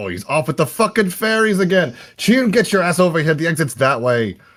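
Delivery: very high, irritated, annoyed shout. Voicing a character yelling at an ally to come over: yelling, a little pissed off. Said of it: "he's gonna yell out, just kinda pissed off".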